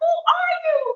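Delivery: shrieking, very high-pitched screaming cry. Retelling a confrontation, the speaker acts out what she screamed: retelling her own screaming. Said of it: "And I started screaming".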